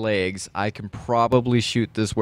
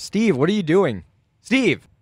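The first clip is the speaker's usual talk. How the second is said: raised-pitch shouting; 9 semitones higher, 3 dB louder than usual. Playing John in a role-playing game, yelling at Steve who is going crazy. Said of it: "John just starts yelling at him".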